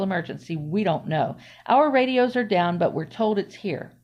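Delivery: ordinary delivery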